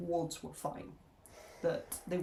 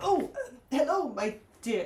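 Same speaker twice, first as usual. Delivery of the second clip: put-on high, loud elderly character voice; 7 semitones higher, 6 dB louder than usual. Playing an elderly cleric who shuffles in and greets Polly; elderly cleric voice. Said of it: "this like elderly cleric would shuffle in".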